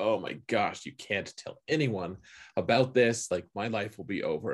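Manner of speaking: play-acted panicking, desperate, frantic begging tone. Retelling a book scene where the Saldam is caught: imitating someone panicking. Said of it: "just panicking".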